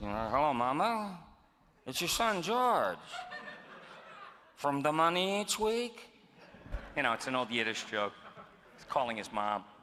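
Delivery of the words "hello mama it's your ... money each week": high-pitched, mumbly talk as if marbles in mouth. Describing a vaudeville toastmaster and imitating his marble mouth. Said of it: "he had this marble mouth, like this".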